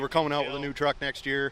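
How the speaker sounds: usual speaking voice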